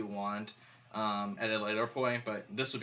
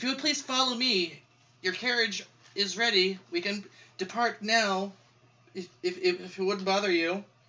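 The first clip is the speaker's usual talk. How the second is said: very high, raised, timid intimidated halfling voice; 10 semitones higher, 5 dB louder than usual. Narrator voicing a halfling-sized man who walks in, intimidated halfling-sized man. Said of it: "he's kind of intimidated by you guys".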